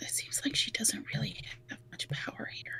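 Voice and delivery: very quiet whispered aside. During a role-play game, a player's character whispers to Reginald. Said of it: "of whispers to uh".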